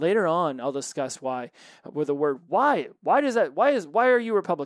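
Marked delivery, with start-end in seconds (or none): 2.5-4.7 defensive, much higher, louder, slower. Demonstrating how a question about someone's party can sound, in a defensive tone. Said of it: "You say it like that, man, that's almost defensatory".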